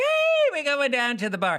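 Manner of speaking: fake Irish accent, high, swooping and sing-song. Giving examples of accents nobody gets in trouble for: put-on Irish accent. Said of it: "Or Irish".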